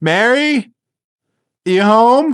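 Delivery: put-on high, loud upward-calling yell. Acting out a scene, calling up the stairs, imitating someone yelling. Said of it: "yelling up the stairs like".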